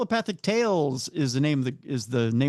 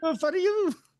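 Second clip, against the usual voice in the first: put-on drunk Italian accent, pitched higher. Imitating Rocky when he's drunk: imitating Rocky drunk, Italian accent. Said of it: "That's pretty much Rocky when he's drunk".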